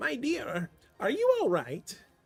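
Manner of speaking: put-on gentle, concerned, high, slow, kindly old-woman voice. Voicing an old woman waking a sleeper in a pub: kindly old woman voice. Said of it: "you hear a kindly voice".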